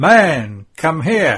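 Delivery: very loud, authoritative, commanding call. Narrator reads the centurion calling a man over, commanding voice. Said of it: "says to him in a commanding voice".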